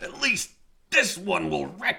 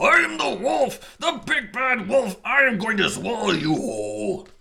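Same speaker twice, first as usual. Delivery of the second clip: raging, furious wolf howl, pitched high; 6 semitones higher, 4 dB louder than usual. Narrator reading a story as the wolf lunges at the child, furious howling wolf voice. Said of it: "Furious, the wolf threw himself at the child, howling".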